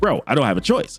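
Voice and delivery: ordinary talk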